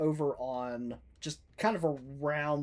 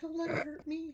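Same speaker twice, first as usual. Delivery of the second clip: sweet tiny voice, higher and quieter; 5 dB quieter than usual. Speaking in character to Rorn through a fog cloud: sweetest little voice. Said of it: "the sweetest little voice ever".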